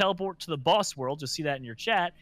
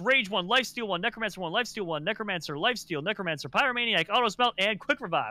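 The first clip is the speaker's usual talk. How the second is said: rapid-fire auctioneer patter, rattled off; 4 semitones higher than usual. Gamer rattles off the list of books he bought, very fast like an auctioneer. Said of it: "You said that so fast it was like an auctioneer".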